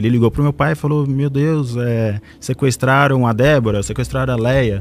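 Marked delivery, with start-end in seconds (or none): none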